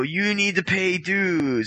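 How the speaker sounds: slow, deliberate speech, each word drawn out. Retelling people at the gym asking a feared man for dues, speaking slowly. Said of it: "they'd speak slow".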